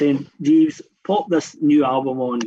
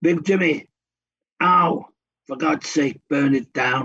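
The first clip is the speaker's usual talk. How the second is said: gruff put-on Birmingham accent, shouted. Retelling what a man shouted, in a gruff Birmingham accent. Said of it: "In this kind of gruff Birmingham accent".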